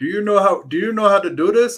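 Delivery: put-on Indian accent. Speaker retells a man in a long line asking them a question, imitating an Indian accent. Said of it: "he's like Indian".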